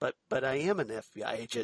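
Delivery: dead straight, deadpan, well-timed delivery. Discussing an episode's exchange, quoting Mulder's reply with mimicking Mulder's deadpan. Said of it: "Mulder deadpan".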